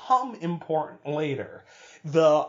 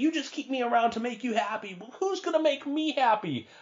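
mock, plaintive, high, whiny complaining tone; 8 semitones higher than usual. Retelling a character's outburst at his friends: imitating a whiny complaint. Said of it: "Which sounded really whiny".

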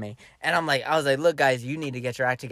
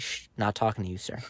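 mock-dismissive shushing, much quieter; 6 semitones lower, 9 dB quieter than usual. Retelling shushing a kid while talking to his girlfriend, dismissive shush. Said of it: "here's the most disrespectful thing you can do".

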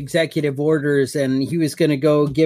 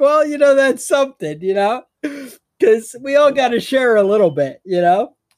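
high-pitched mocking voice. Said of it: "It's like".

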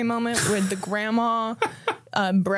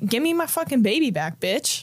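put-on defensive snapping tone. Recapping a show scene, retelling a character's reply: mock-defensive Shauna. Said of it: "Shauna's very defensive".

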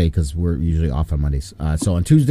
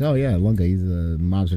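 normal talking voice

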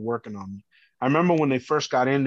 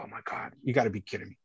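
soft, unvoiced, stunned whisper. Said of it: "And I'm like".

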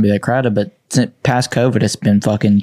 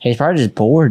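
ordinary talk, nothing marked

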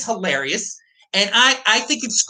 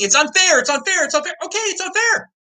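put-on outraged, indignant cry, high, repeated over and over; 8 semitones higher than usual. Imitating people who get cut off from trading: imitating people screaming. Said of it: "start screaming".

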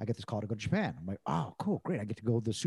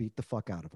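quiet voice, pitched lower; 5 semitones lower than usual. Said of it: "And real just quiet, he goes".

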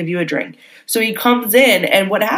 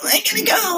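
squeaky, very high, whiny crying through tears; 12 semitones higher, 4 dB quieter than usual. Retelling how someone left crying after a breakup: imitating a whiny cry. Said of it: "whiny cry".

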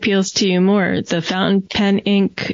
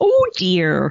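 put-on voice sounding like a grandma. Repeating a phrase after noticing it sounded like someone's grandma: grandma voice. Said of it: "I sounded like someone's grandma".

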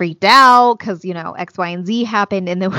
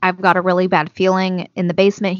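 ordinary talk, nothing marked

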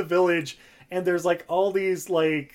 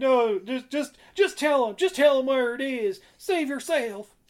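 put-on, higher-pitched American southern accent; 7 semitones higher than usual. Retelling a movie scene where Hook pleads with Tiger Lily: imitating a southern accent. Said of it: "he has, like, a southern accent going on".

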